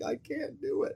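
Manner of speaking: crying, breathy, tearful whispered sob. Retelling crying at the pool's edge as a child: imitating own past crying. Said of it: "I'd just be crying, like".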